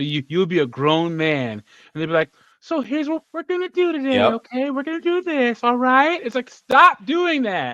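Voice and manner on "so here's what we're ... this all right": very high, patronizing elementary-school teacher voice. Mimicking how a woman who teaches elementary school talks to a grown man: elementary school teacher voice. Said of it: "they always have that elementary school teacher voice".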